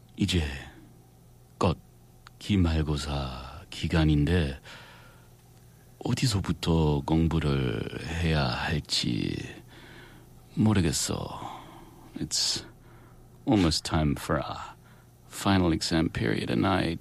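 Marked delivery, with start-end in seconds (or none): 0.2-11.4 sweet cutie-patootie voice, very slow. In a korean role-play, playing the cutie patootie, cutie patootie voice. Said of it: "I'll put on my best cutie patootie voice".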